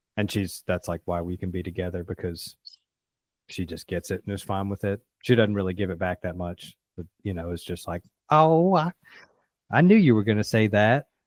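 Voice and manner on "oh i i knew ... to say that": put-on raised, high elderly rural woman's voice. Quoting how she usually answers him, in an old country woman voice. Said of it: "making her sound like an old country woman".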